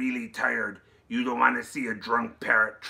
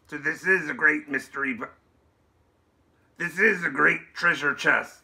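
laid-on, swashbuckling put-on pirate brogue; 4 semitones higher, 3 dB louder than usual. Showing off a treasure chest to another person, pirate accent. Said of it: "by the great accent".

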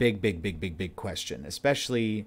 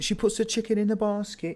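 put-on Scouse accent, pitched way up; 13 semitones higher than usual. Speaker practicing a key phrase to work out an accent, in a scouse accent. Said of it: "that's like the Scouse accent".

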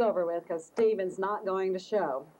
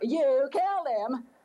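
high-pitched accusing cry, kept small; 5 semitones higher than usual. Recounting Daddy running around the house yelling at him, retelling a yell. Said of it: "kept running around the house yelling".

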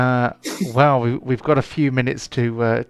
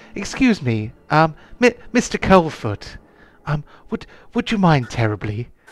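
cultured, refined, cultivated voice, softly spoken; 3 semitones higher than usual. Narrator voicing a voice speaking into Borin's ear, cultured and soft. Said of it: "a cultured voice speaking softly".

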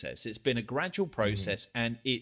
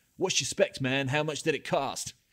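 imitated American accent, fake; 3 semitones higher than usual. Acting out how someone might ask about an item, imitating an american accent. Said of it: "that American accent is just spot on".

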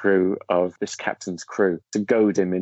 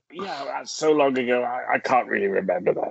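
higher, throat-straining, strained-throat impression; 4 semitones higher than usual. Recounting a conversation with an actor about his past films; throat-straining actor impression. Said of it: "That's a great impression".

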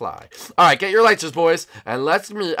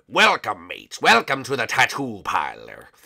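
low, swooping pirate character voice; 6 semitones lower than usual. Greeting visitors to a tattoo parlor in a game roleplay: pirate voice. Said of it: "Whoa, dude, a pirate".

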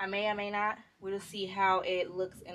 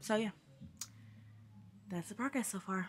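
out of breath, quieter; 7 dB quieter than usual. Vlogger updating viewers on laundry progress, out of breath. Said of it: "I'm out of breath".

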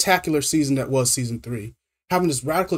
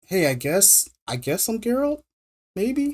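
hesitant, pitched-up, uncertain delivery; 7 semitones higher than usual. Mocking a trailer moment, imitating Liam Hemsworth, hesitant. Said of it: "He turns around like".

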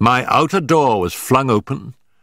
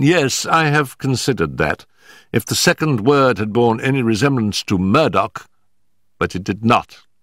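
plain

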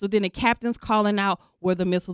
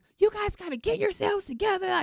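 very high, loud, yelled voice; 11 semitones higher, 4 dB quieter than usual. Retelling how the chief reacted during a missile threat, imitating him yelling. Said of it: "He's like yelling at us".

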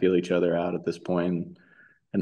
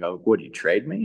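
joking tone, slower. Retelling what you jokingly asked him over the phone, retelling a joking question.

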